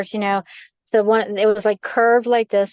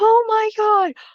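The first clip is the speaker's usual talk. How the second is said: put-on panicked scream, higher pitched; 13 semitones higher than usual. Retelling running out of the room after something flew: imitating own past screaming. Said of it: "I ran out of my room and I was screaming".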